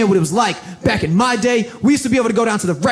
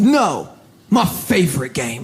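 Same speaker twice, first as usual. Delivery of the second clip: very slow, ominous, foreboding delivery; 5 semitones lower than usual. Retelling how a grandfather answered about his favorite game: imitating an ominous tone. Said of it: "That was real ominous".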